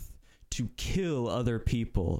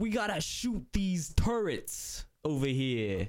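put-on Italian accent, pitched a bit higher; 5 semitones higher than usual. Mocking a film character who sounds like an Italian guy: Poe as an Italian guy. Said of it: "why is Poe an Italian guy".

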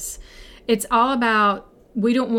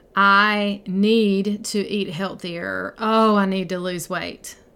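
slow, grudging, reluctant, negative tone. Showing how a need-to statement sounds: negative, resistant tone. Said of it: "you can just hear that tone".

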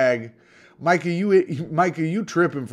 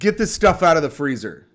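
plain, direct delivery; 3 dB louder than usual. Retelling what a visitor said on coming in: imitating how he said it. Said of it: "That's how he said it".

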